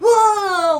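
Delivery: high, loud, amazed gasp of awe, stretched long. Retelling how two viewers reacted to a cool scene: retelling an amazed gasp. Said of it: "myself and Mark were like".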